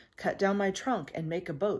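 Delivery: plain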